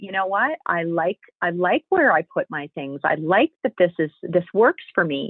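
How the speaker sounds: ordinary talk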